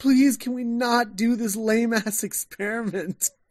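high, slow, begging voice on verge of tears. Retelling a TV scene, imitating Susan near tears. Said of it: "she just looks like she's gonna cry".

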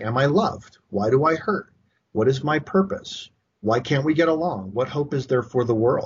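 ordinary delivery

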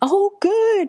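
thrilled, high-pitched, excited squeal. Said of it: "I was so excited".

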